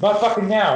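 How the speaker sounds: angry, high-pitched snap. Acting out a reply to a spouse asking for help: imitating an angry snap. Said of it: "Don't talk to me that way".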